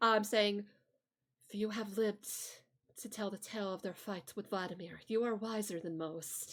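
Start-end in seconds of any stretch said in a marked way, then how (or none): 1.5-6.5 very soft, hushed voice. Narrating to the players a voice speaking from behind them, in a very soft voice. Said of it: "you would hear a very soft voice".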